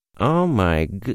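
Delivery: ordinary delivery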